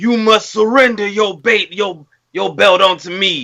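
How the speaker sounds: put-on wrestling promo character voice. Acting out a wrestling storyline idea: Bray Wyatt impression. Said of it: "this is Wyatt impression".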